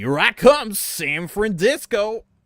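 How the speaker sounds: shrill, loud, high-pitched call held long. Quoting a line while doing a Toby Fox impression. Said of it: "No, that's not quite right".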